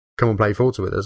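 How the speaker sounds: ordinary talk, nothing marked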